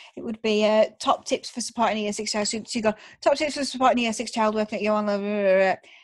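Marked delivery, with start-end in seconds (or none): 3.2-5.8 put-on very fast, rushed reading-aloud delivery. Imitating how she used to read a question aloud, imitating reading really fast. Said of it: "she would just read really fast".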